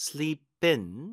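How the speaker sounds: IN stressed with a rising pitch.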